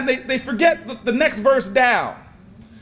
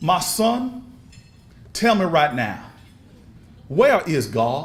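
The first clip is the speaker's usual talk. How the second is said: deep baritone, spoken low; 8 semitones lower than usual. Retelling a joke, voicing a pastor questioning a boy: low baritone voice. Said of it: "utters in his baritone voice, lowly".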